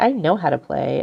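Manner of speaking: put-on plain, certain, matter-of-fact tone. Imitating a young daughter insisting she can play: imitating a matter-of-fact daughter. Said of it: "so matter-of-factly".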